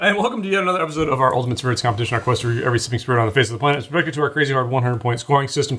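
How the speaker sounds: super fast, rattled off at top speed. Host opening a spirits review episode, Micro Machines guy fast talk. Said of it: "You're like a micro machine guy".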